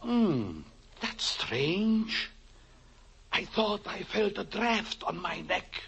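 soft, high whisper. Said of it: "what are you whispering for?".

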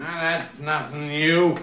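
put-on slurring drunk voice. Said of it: "You're drunk again".

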